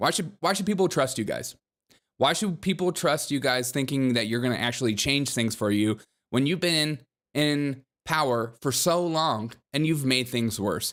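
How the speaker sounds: ordinary delivery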